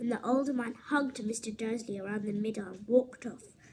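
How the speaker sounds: plain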